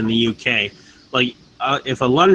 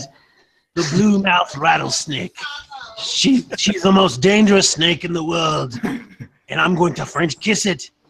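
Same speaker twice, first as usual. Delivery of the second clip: put-on Australian accent, pitched up; 5 semitones higher than usual. Asked for an accent, offering the best one they can: australian accent. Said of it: "the best I can do is an Australian one".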